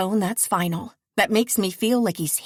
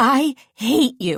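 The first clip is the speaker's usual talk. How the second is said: raised, spluttering, half-coughing outburst; 3 semitones higher, 5 dB louder than usual. Reading a scene surfacing from cold water: spluttering. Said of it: "I splutter".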